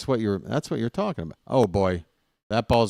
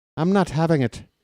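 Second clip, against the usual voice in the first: put-on Irish accent, much higher; 6 semitones higher than usual. Bantering about Irish Orioles players, answering Shibby in an Irish accent. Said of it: "don't you dare make fun of me Irish accent".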